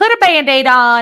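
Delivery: exaggerated, high, over-the-top fake Texas accent. Quoting an eighty-two-year-old woman from Texas, in an exaggerated Texas accent. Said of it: "she doesn't have that accent like I'm doing".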